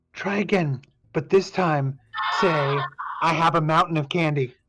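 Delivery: stage whisper, hushed but carrying. Retelling what she prompted a performer to say, in a stage whisper. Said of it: "as the stage whisper, she says".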